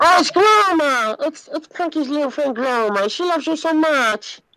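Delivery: very high little alien voice. Recalling Punky's little alien friend, Gloma voice. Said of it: "it's always this type of voice".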